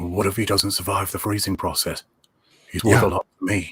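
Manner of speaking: snarky, untamed voice. Recalling a Star Wars film line: original Boba Fett voice. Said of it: "that original Boba voice".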